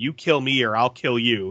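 plain

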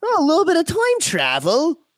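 very high, swooping put-on leprechaun Irish accent. Riffing with others mid-conversation, in a leprechaun accent. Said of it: "I don't know why I went leprechaun".

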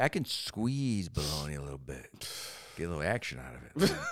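soft, hushed, suggestive dirty-talk whisper. Joking about squeezing bologna, mock dirty-talk whisper. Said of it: "whispering it in the the dirty talk".

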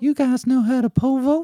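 woman's voice, pitched very high. Quoting a film line for a quiz, in a woman's voice. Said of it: "Could do that in a woman's voice".

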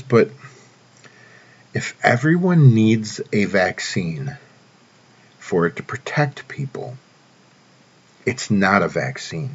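drawn-out, very slow, deliberate delivery. Speaker reading a statement to listeners so it sinks in, reading really slow. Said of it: "I'm going to read this really slow".

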